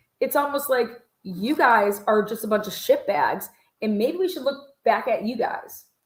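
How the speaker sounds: heated, worked-up, angry, fired-up outburst. Ranting about people at the house, fired up. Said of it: "I'm really fired up about that".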